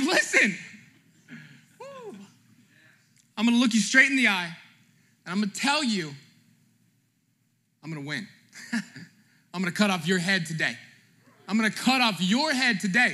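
mock fearless, bold, defiant, in-your-face tone. Acting out David's words to the giant: acting out bold defiance. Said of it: "it's called boldness".

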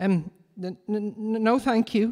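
halting, nervous stammer. Philip, offered a sack of cats by a menacing stranger, stutters nervously. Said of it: "stuttered Philip nervously".

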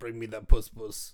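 put-on Jersey accent. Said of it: "a New Jersey accent".

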